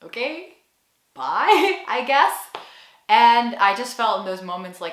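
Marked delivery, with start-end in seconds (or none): 0.0-2.5 very slow, baffled, confused, pitched-up delivery. Retelling a barista's reply to an odd goodbye: imitating a confused barista. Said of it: "the barista would be very confused".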